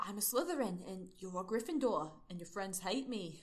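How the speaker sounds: put-on Australian-sounding accent. Reading a character's lines from a story aloud: Australian-sounding accent. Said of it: "why do I sound Australian?".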